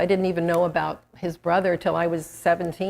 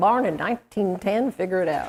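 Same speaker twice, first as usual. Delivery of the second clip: put-on fatherly Texan-accented voice. Quoting his father's answer when asked his age, in a texas accent. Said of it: "Texas accent".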